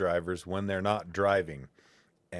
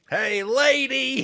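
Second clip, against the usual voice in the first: put-on very high old man's hollering shout, drawn out; 8 dB louder than usual. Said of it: "this old man yelling at me".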